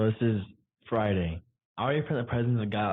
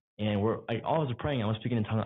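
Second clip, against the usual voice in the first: plain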